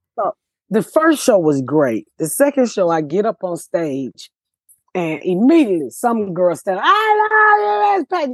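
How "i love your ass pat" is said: play-acted, very high, sloppy, drunken voice. A comedian retelling a heckler shouting from the crowd, imitating a drunk heckler. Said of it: "just drunk".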